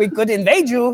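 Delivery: terrible, bad, fake put-on German accent. Acting out a man's words to Jeremy, in a bad German accent. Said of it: "That is the worst German accent".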